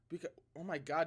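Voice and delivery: voice breaking mid-phrase. Streamer starting a chapter reading when their voice breaks: voice cracking. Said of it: "did my voice just break right there?".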